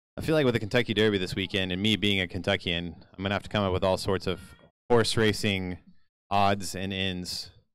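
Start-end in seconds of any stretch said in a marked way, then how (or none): 6.3-7.5 odds leaned on, slow and drawn out. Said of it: "Emphasis on the odds".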